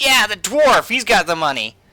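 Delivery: very high, loud put-on thug voice. Voicing a thug who runs after the dwarf: voicing a thug. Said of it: "he's just like".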